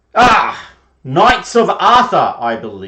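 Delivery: loud, booming put-on voice. Voicing a knight greeting the Knights of Arthur: loud booming Brian Blessed voice. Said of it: "at the top of his voice, in a very loud and booming sound".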